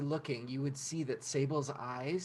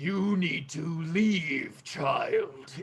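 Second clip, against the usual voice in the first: booming, loud voice amplified like a loudspeaker; 2 semitones higher, 7 dB louder than usual. A voice booms out of the kaiju sleeve at the child: booming amplified voice. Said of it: "It booms out of this kaiju vo- uh, sleeve. Uh, and you hear that voice just amplified".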